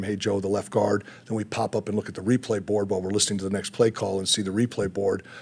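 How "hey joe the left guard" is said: usual speaking voice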